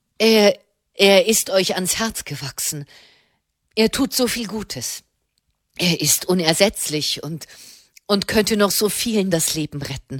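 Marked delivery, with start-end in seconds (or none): none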